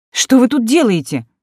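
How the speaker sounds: outraged, affronted, indignant tone. A woman finds a count waiting in her flat, indignant. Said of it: "возмутилась я".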